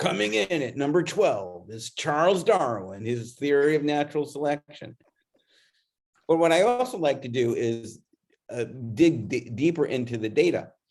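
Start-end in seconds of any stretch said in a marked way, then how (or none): 0.0-5.0 radio countdown host, chart-show DJ announcer voice. Announcing a countdown place on a ranked list: Casey Kasem voice. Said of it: "put on my Casey Kasem voice".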